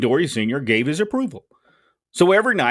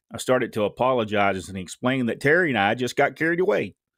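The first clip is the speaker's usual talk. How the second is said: normal talking voice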